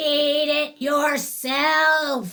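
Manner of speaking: loud, rough, scratchy growl. Reading a story, Leah answers her shouting parents in a deep, scratchy growl. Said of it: "growled Leah in that deep, scratchy voice".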